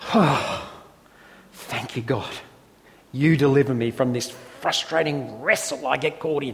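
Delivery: gasping, breathy voice full of relief.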